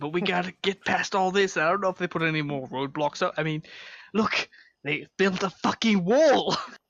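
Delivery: put-on slight touch of British accent. Speaker in character, planning to scout a place past roadblocks: slight British accent. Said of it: "We're slightly diverging into British".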